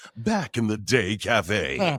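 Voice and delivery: throaty, guttural movie-trailer announcer voiceover. Imitate the guy recording his voiceover stuff, in a guttural movie trailer guy voice. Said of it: "It was real guttural".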